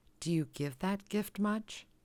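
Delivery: timid, sheepish. Reading a story aloud, voicing the narrator's own line: soft, sheepish voice. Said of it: "I hear the soft voice ask him sheepishly".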